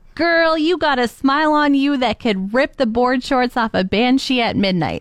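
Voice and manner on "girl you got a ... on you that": ordinary delivery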